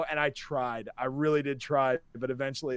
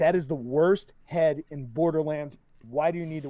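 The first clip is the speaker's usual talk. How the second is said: ordinary talk, nothing marked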